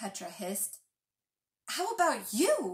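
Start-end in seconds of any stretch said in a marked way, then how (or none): 1.7-2.8 curt, sharp, higher-pitched snapping tone. Calder answers Petra's question with one of his own: snapped back. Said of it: "he snapped back".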